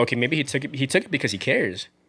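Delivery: ordinary talk, nothing marked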